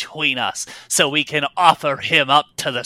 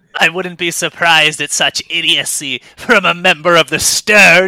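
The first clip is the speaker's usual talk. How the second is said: loud, mocking, taunting jeer; 3 semitones higher, 6 dB louder than usual. Voicing a dragon captain taunting for her crew's laughter: mocking captain voice. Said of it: "She says that last part clearly to elicit a laughing reaction".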